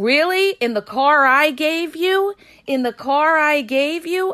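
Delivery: acted-out woman yelling. Telling the audience about a date, acting out the woman yelling at him: retelling her yell. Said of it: "she's yelling at him".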